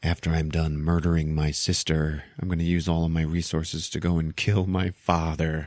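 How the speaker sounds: put-on suddenly solemn, earnest, grave delivery. Retelling a scene, imitating her: someone getting all serious. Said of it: "she gets all serious".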